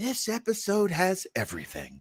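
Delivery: high, swooping sing-song delivery. Praising an episode, sounding like Stefan from Saturday Night Live. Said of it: "I sound like Stefan from Saturday Night Live".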